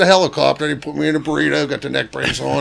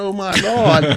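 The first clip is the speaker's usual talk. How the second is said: mock panicked, frantic freaking-out cry; 6 semitones higher than usual. Retelling a fall, imitating Mark freaking out. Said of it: "All I can hear is him running around saying".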